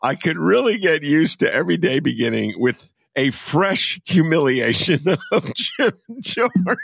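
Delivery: words broken up by giggles. Reading a guest's tweet aloud after breaking up twice: laughing while reading. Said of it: "Sorry, I gotta get through this".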